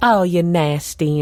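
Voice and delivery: put-on sassy Southern belle accent, full sass. Retelling an interview answered in character: Lacey Evans sassy Southern belle voice. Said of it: "she's a sassy Southern belle".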